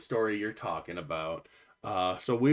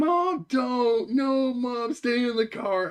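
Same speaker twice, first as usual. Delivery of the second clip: very high, loud, panicked pleading scream; 5 dB louder than usual. Retelling being woken by girls in the back seat: imitating girls screaming. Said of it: "the two girls in the back seat screaming".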